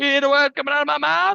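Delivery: very high, loud put-on voice. Quoting a movie line after Chris Tucker is mentioned: Chris Tucker impression. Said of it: "That was pretty good, [name]".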